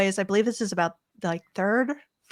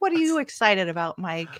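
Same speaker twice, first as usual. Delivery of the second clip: ordinary delivery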